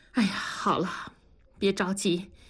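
plain reading voice

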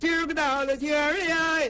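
high, slow, drawn-out far-carrying street cry. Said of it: "顺着风儿这一嗓子能听半里地去".

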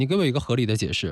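normal talking voice

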